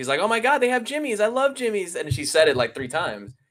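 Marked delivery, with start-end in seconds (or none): 0.2-2.0 put-on very high-pitched, thrilled, excited gush. Retelling a girlfriend spotting a product in a store: imitating excited girlfriend. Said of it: "my girlfriend gets all excited".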